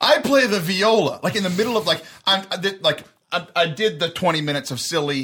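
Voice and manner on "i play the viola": mock child's voice, high, slow, drawn-out yell. Retelling a kid heckling a talk: imitating a kid yelling out.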